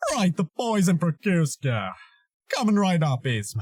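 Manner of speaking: deep voice with pitch swooping up and down. Showing how to shape a voice step by step: Kronk voice. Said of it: "sculpting Krunk's voice".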